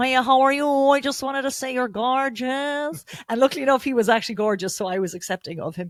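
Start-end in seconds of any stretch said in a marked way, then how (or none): 0.0-3.0 put-on broad, thick Cork accent, slow and high. Retelling how a man in cork came up and complimented the speaker, broad cork accent. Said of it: "in his big Cork accent".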